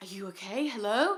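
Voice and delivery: faint, faraway voice calling out. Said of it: "I hear this faint voice just going".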